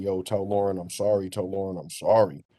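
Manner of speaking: sobbing, crying voice, words repeated twice. Retelling how a man in rehab apologized: imitating someone crying. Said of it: "crying, saying".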